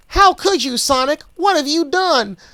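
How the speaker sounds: deliberately bad, squeaky, high-pitched cartoon voice. Reading a story aloud, imitating a screaming, tearful cartoon fox: bad nineties Tails impression. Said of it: "that was a bad nineties Tails impression".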